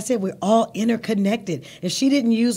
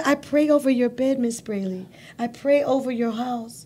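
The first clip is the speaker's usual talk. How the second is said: put-on imitated Spanish accent. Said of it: "I'm trying to do her accent".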